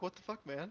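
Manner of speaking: acted startled jumpiness. Playing a character who jumps in fright: acting startled and jumpy. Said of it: "I'm gonna jump a little bit and be like".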